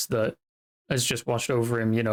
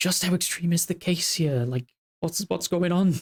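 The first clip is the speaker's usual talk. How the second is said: whispered aside, much higher pitch; 7 semitones higher than usual. Narrator voices a character whispering to the player beside him, whispering under his breath. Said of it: "sort of whispering to you under his breath".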